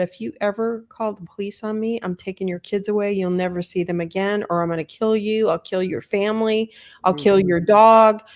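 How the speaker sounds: put-on speech through gritted teeth. Acting out an abuser threatening his partner: speaking through gritted teeth. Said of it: "through gritted teeth and said".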